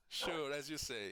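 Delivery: mock sarcastic teasing, high and loud.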